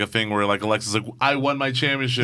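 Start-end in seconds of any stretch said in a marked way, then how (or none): none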